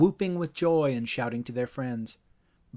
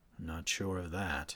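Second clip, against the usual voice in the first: very hushed, very low, slow muttering; 8 semitones lower, 10 dB quieter than usual. Invited by Dave to a school fundraiser, Mick replies, muttering. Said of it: "Mick muttered".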